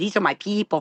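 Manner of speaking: bad, forced put-on Spanish accent. Actress recalls failing at a Spanish accent for a CBS role, bad Speedy Gonzales Spanish accent. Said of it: "It was like Speedy Gonzales".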